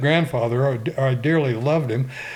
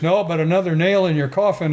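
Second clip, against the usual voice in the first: loud voice, higher pitch; 3 semitones higher than usual. Retelling what the step-grandfather said in a tobacco town, retelling a loud remark. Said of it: "said in a loud voice".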